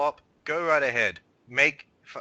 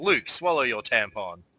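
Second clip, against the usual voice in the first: normal talking voice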